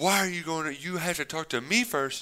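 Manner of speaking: acted furious, high, defensive screaming rant. Retelling how Michael stormed in screaming at Kevin: imitating Michael screaming. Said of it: "just starts screaming at him".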